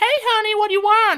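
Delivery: very high, loud, classic diner-lady voice. Recalling the waitress coming out on his first day in America, classic diner lady impression. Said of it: "Like she's like classic like diner lady".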